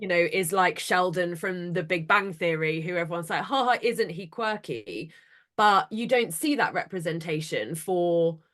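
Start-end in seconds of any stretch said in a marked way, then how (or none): none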